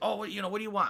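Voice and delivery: put-on broken English. Retelling an airport server taking their order, imitating broken English. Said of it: "Very, very broken English".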